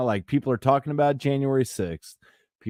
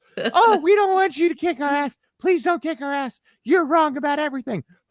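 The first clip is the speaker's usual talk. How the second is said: very high-pitched begging, pleading tone; 14 semitones higher than usual. Doing an impression of Alex Jones snapping back. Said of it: "You wanna hear my impression?".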